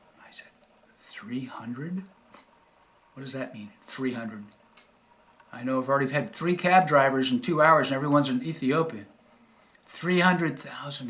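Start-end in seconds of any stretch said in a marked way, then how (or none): 9.8-11.1 soft, hushed, quiet, embarrassed-sounding voice. Retelling what the man told him when asked, in a quiet voice. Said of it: "he said in a quiet voice".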